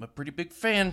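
very loud, high-pitched, belted-out delivery. Doing the promised impression of a film character after announcing it: Robert De Niro in The Fan impression. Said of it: "I'm just gonna do my impression of Robert De Niro in The Fan".

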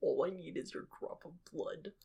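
hushed, breathy whisper, breathed out. Recapping a video, Theranos lady impression. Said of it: "That was a good Theranos lady impression".

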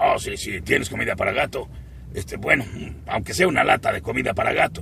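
rough, creaky, raspy voice. Voice actor shows how the character spoke in the first episodes, ALF voice. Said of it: "Hablaba así Alf".

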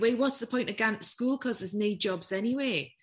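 all-out put-on pure Geordie accent. Voicing schoolkids whose families had just been made redundant, pure Geordie accent. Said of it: "I'm going to put a pure Geordie accent on here".

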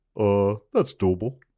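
plain, everyday buddy voice, just talking. Doing an impersonation of the listener Al: imitating Al. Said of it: "Here's my impersonation of you".

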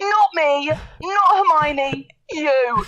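very slow, emphatic character voice. Doing a Harry Potter impression from the chess scene. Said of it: "do your Harry Potter impressions".

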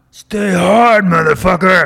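put-on drill-sergeant-style yell, very loud, high-pitched. Imitating David Goggins' catchphrase, yelling David Goggins impression. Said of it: "Like David Goggins".

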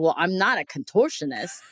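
put-on spoken with a Boston accent. Retelling what a woman said to the speaker: boston accent. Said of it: "with her like boston accent".

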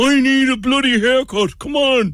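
squeaky, very high dog voice. Showing how they give their dogs a voice at grooming time; voicing a dog. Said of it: "you give them a voice".

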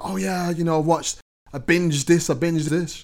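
high, loud, mocking actor voice. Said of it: "I hear a lot of actors talk about".

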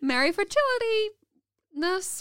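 put-on American accent. Joking a holiday wish after a gift list, in a put-on american accent. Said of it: "Why was it American as well?".

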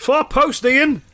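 shrill, very high shouted voice. Narrating a Blackton forward calling to a teammate, shouting. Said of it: "one of the Blackton forwards shouts".

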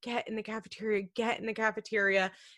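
mock scared, panicked, urgent voice. Retelling how Michelle ordered kids into the cafeteria: imitating Michelle's panicked voice. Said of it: "the look of panic and, like, in her voice".

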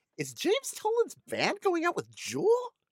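very high, sing-song, swooping voice. Joking about a headline, the speaker shows how you'd ask it: really high voice. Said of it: "you ask in a really high voice".

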